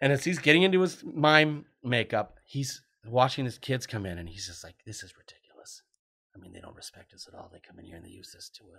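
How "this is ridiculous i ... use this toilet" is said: very soft, hushed, angry grumbling mutter. Retelling a story, the speaker imitates a man in mime makeup mumbling to himself. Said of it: "He's mumbling to himself".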